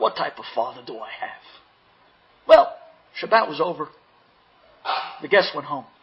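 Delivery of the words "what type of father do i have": low, enraged muttering under the breath. Retelling a boy stomping out of the house: imitating enraged mumbling to himself. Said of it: "mumbling to himself".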